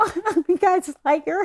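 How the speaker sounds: put-on crying voice. Retelling meeting a wrestler for the first time: retelling own crying. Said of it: "I'm, like, crying, going".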